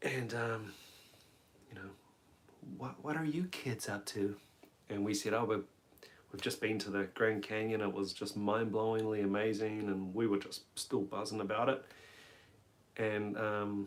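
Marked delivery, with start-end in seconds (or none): 2.8-4.4 soft, put-on American drawl accent. Retelling what the lady serving them in a diner said, imitating a drawl accent. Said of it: "she had a fantastic like drawl accent".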